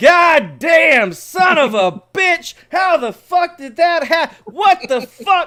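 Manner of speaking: high, shrill, booming, very loud yelling. Telling a fishing story, the speaker acts out the man behind him, retelling a cursing yell. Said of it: "he's still yelling".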